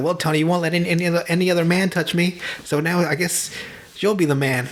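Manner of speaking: put-on strange, sultry, seductive voice. Retelling a scene where Gina speaks to Tony: mimicking Gina's weird seductive voice. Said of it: "talking to him like in a weird, seductive voice".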